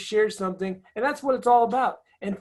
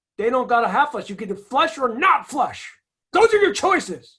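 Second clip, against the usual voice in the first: loud, full-throttle yelling rant; 4 dB louder than usual. Comparing home in Northern California with Australia, the speaker rants: yelling. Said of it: "I'm yelling right now".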